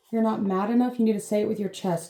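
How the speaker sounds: ordinary talk, nothing marked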